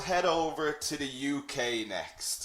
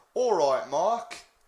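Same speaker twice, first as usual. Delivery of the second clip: put-on English accent; 3 semitones higher, 4 dB louder than usual. Teaching slang greetings, showing how to greet a friend, English accent. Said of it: "I'll do my best to do an English accent".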